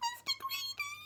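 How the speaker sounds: very high, tiny, frightened squeak. A storyteller voices Mister Greedy giving his name to the giant: Mister Greedy squeaking. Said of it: "he squeaked".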